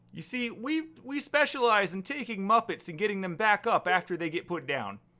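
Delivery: loud, very high puppet-like voice. A necromancer character explains his guild's specialty, in a Kermit the Frog voice. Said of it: "the last voice you expect to come out of a necromancer".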